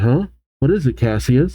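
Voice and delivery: normal talking voice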